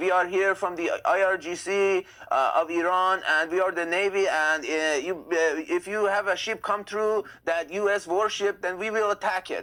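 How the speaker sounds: slow, high, fake, poor Persian accent. Retelling a fake navy radio call: imitating a bad Persian accent. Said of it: "didn't even really have a good Persian accent".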